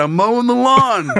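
put-on slurred, utterly sure drunk talk. Retelling dad's answer when mom woke and asked what he was doing, retelling a confident drunk slur. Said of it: "full of confidence, slurred".

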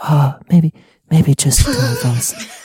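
intimate, hushed, leaning-in stage whisper. Imitating how everyone speaks in a film scene: imitating a soft whisper. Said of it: "everybody's whispering in that scene".

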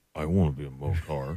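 quiet, low muttering under the breath. Imitating a guy in a Geico commercial: mumbling under his breath. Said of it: "mumbles under his breath".

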